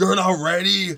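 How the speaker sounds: high, loud, slow yell. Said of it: "he yells at me".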